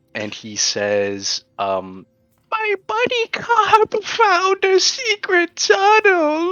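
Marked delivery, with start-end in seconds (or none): 2.5-6.5 put-on shrill, high, loud, full-on sobbing child voice. Voicing a child who starts bawling when questioned: crying child's voice. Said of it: "He starts bawling, just crying. Full on crying".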